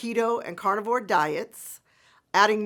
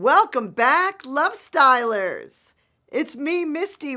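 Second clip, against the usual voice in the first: slightly froggy, hoarse voice with a touch of croak; 5 semitones higher, 5 dB louder than usual. Welcoming back the Love Stylers while still a bit froggy-voiced. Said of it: "with a little bit of a froggy voice still".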